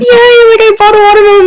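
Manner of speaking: thrilled, delighted, high-pitched excited voice. Retelling mom buying a watermelon, imitating mom's excitement. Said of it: "she was so excited".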